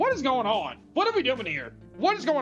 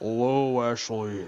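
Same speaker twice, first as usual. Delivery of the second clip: put-on voice, much lower; 11 semitones lower than usual. The speaker voices a talking thing greeting Ashley, in a deeper voice. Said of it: "I'm gonna give it a little bit deeper voice".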